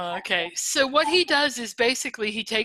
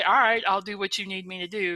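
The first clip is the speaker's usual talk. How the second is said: normal talking voice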